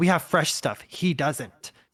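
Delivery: play-acted competitive, boastful tone. Retelling what the girl at the first gelato stand said, in a competitive tone. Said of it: "Like like very much like in a competitive tone".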